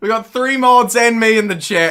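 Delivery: high-pitched screaming. Telling off a chatter named Jody: screaming. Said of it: "I'm, like, screaming".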